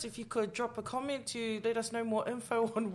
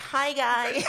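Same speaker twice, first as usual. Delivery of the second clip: loud, mocking, fake American accent; 2 semitones higher, 8 dB louder than usual. Mocking people who pick up an accent after a two-week trip, mocking a fake picked-up accent. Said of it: "they go for 2 weeks and they're like".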